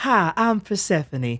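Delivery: high, put-on Southern belle accent. Introducing a D and D character, Persephone's Southern Belle accent. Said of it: "I would speak in this Southern Belle accent".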